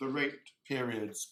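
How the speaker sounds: leaning on plural "periods".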